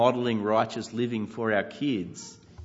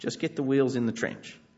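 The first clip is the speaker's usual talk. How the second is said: ordinary delivery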